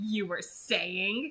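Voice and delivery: teasing, playful, growled delivery. Holding the narrator tight against his chest, he speaks in a playful growl. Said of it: "he growled playfully".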